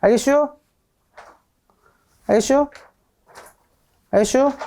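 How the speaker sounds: Chungcheong Korean dialect with -슈 sentence endings. A teacher checks whether the students understand, in Chungcheong dialect. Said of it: "사투리 쌤이 쓰는 사투리가 슈를 쓰는 거냐".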